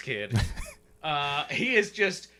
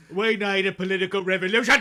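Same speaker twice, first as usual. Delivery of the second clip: British accent, a bit higher pitched; 5 semitones higher, 4 dB louder than usual. Answering a request to do a British version: British Bernie Sanders impression. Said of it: "Can you do British Bernie Sanders?".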